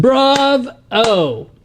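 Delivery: bravo called out very high, pitched way up. Picturing James in the background reacting: imitating James saying Bravo. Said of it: "you can see James in the background going".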